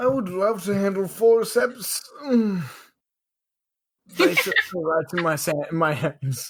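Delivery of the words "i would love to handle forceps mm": high, sultry, seductive purring voice. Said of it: "say forceps one more time".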